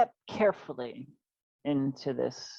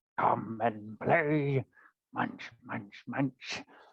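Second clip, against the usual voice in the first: low, rough, gruff voice; 4 semitones lower than usual. Narrator voicing a voice calling from within the trees, gruff voice. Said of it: "gruff voice uh, calls from within the trees".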